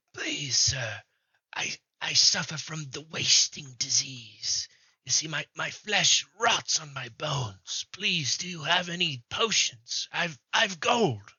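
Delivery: cracked, almost half-whispery pleading voice. Game master voicing a cloaked figure begging at the players' cart, cracked half-whispery voice. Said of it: "in like a kind of cracked, almost whispery voice".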